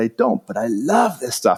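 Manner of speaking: well done, convincing put-on Italian accent. Retelling what a man said on a TV show: imitating an Italian accent. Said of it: "in this really great Italian accent".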